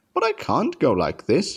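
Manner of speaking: alarmed, high-pitched, protesting exclamation. Woken early by his driver for an emergency job, he protests, exclaiming. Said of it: "exclaimed Henry".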